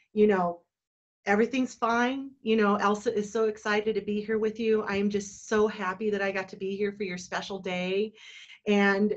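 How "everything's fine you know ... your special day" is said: plain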